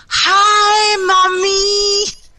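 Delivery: put-on acted, very high, top-of-the-lungs drunken shout, drawn-out "hi". Retelling calling out to her mom over the phone while drunk, retelling a drunken yell. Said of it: "at the top of my lungs".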